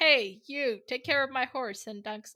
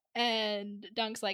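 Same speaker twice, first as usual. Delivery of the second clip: normal talking voice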